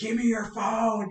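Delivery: put-on angry voice. Retelling demanding a teammate's phone: retelling an angry demand. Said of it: "You look really angry".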